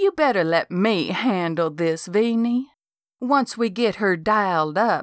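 plain reading voice

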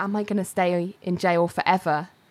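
ordinary delivery

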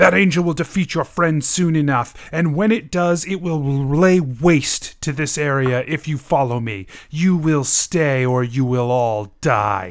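menacing, called-out, flung tone. Voicing a fleeing character who shouts a threat back down the hallway: character shouting. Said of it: "he shouts".

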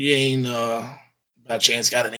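raspy, rasping delivery. Game narrator voicing a stranger with a tourniquet flagging travelers down, raspy voice. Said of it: "he looks up with a raspy voice".

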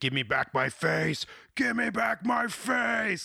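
very high, ragged, rough, drawn-out rising shriek. Retelling a scene where police pull off a mask: imitating a screaming character. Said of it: "he's screaming".

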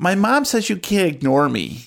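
put-on high little girl voice, about nine. Voicing a nine-year-old tag-along begging to join the club: voice of Gertie, nine-year-old tag-along. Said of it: "the voice of Gertie".

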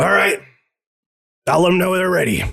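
gruff captain voice. Game master voicing the captain answering his crew, in a gruff captain voice. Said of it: "a gruff captain".

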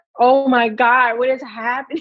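acted-out crying. Recalling a day when fear and anxiety sank in, retelling own past crying. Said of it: "I remember one day just like crying".

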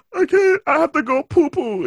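very high, earnest, distressed and serious voice. Showing how someone would say it with a straight face: mock serious tone. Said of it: "a serious, like, tone".

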